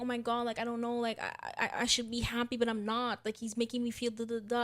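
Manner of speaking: weepy, tearful, stammering crying voice. Retelling how a woman on the show spoke while crying: imitating someone crying. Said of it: "she's literally crying and saying".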